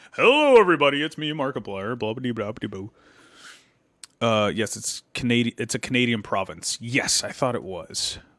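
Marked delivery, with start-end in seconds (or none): 0.2-2.9 deep voice like a video channel intro. Told they sound like Markiplier, the speaker plays along, Markiplier impression. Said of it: "I didn't think I had that deep of a voice".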